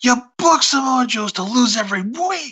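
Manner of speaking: put-on very high, stretched-out, drawn-out shouting. Retelling how someone started yelling at them: imitating someone yelling. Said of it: "he just starts yelling at us".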